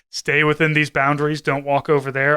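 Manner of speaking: ordinary talk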